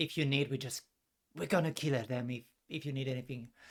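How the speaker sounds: soft, hushed half-whisper, kept low. Voicing a character's offer of help, half-whispering. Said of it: "and she whispers".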